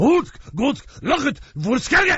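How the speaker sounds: guttural made-up language. Imitating the other actor's reply to the army argument: guttural made-up language. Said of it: "it's gonna sound kinda guttural".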